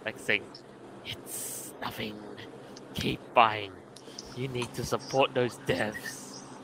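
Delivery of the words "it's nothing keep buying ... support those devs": slow, slithering snakelike vampire voice. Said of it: "speaks like a slithering friggin' a snake vampire thing".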